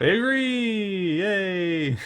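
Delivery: high, slow, excited delighted cheer.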